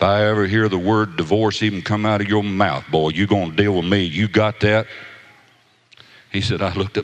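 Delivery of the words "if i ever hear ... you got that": put-on deep, gruff big man voice, louder. Retelling a bride's father warning the groom: imitating a deep gruff voice. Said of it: "had a big old deep gruff voice".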